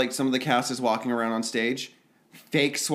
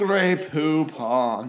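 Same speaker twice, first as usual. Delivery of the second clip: put-on elderly British man accent; 2 semitones higher than usual. Speaker getting into a voice for reading reviews, old british man voice. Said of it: "makes you sound like an old British man".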